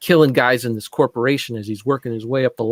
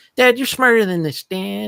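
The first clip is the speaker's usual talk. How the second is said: put-on sassy preteen girl voice, higher; 9 semitones higher than usual. Imitating a preteen daughter in a movie: sassy preteen girl voice. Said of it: "She's got a little bit of sass".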